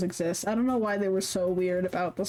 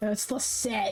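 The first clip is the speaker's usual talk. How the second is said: disdainful, scornful tone. Saying who it was, with a disdainful tone. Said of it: "there was so much disdain in that".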